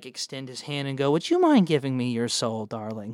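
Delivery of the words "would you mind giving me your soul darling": courteous, silky, overly polite, swooping villain voice. Voicing a floating spirit villain asking a character for her soul: very polite villain voice. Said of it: "in, like, a very polite way".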